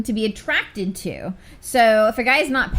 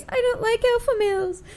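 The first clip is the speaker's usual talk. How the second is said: whining, very high-pitched, whiny voice; 12 semitones higher than usual. Retelling how someone mocked the listener, in a mock-whiny voice. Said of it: "said in a whiny voice".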